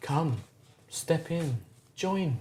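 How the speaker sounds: soft, rising, eerie, drawing-in tone.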